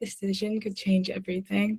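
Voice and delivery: hushed, really soft voice. Saying the same line loud, then soft, then normal, as asked: really soft. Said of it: "really soft".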